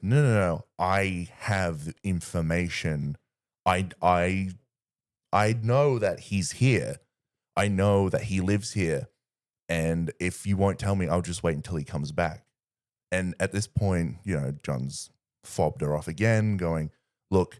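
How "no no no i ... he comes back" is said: plain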